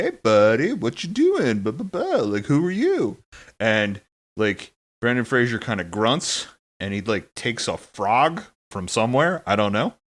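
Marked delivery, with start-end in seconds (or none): 0.0-3.2 casual, high, friendly voice with swooping pitch. Retelling a movie scene where Pauly Shore greets someone: imitating Pauly Shore. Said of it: "Pauly Shore walks over to him, and he's like".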